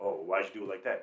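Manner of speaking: snide, snippy, snarky, attitude-laden tone. Retelling how supervisors questioned their work: imitating a snarky attitude. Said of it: "snarky, like, attitude".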